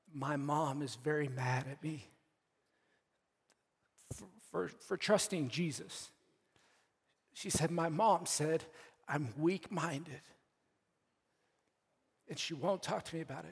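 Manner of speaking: choked-up voice, catching with emotion. Relaying a young woman's text about her angry mother, choked up. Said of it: "sorry, I get choked up at this".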